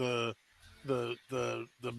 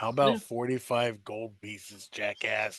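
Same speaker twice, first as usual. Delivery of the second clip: low, half-whispered aside; 4 semitones lower, 3 dB quieter than usual. A player's character half-whispers to the bag: half-whispering. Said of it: "I whispered to the bag".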